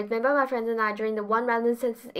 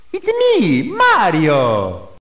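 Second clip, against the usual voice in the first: put-on Italian plumber voice, lower and louder; 4 semitones lower, 11 dB louder than usual. Voicing the plumber called in a made-up story: Mario voice. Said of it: "So he calls Mario the plumber".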